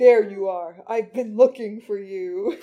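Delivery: deep, sensual, projected sultry male voice. Doing a panel voice the other speaker asked for, in a deep sensual male voice. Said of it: "said the deep sensual male voice".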